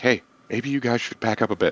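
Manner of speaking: rapid, quick, hushed half-whispered aside. Playing a character, leaning over to another character near a dragon, half-whispering. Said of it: "I lean over to Thorbert and like whisper".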